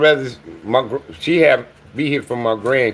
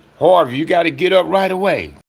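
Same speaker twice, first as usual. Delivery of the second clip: put-on panicked voice, pitched higher; 6 semitones higher than usual. Retelling a voice that woke the speaker up: imitating a panicked call. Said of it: "like in a panic".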